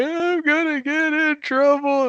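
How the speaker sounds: put-on very high, slow crying child voice.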